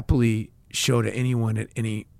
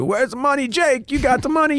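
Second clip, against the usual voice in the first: very high, shouted yell; 14 semitones higher than usual. Recalling men on the back of a garbage truck yelling at him, imitating guys yelling. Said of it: "yelling at me".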